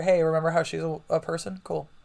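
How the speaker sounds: ordinary delivery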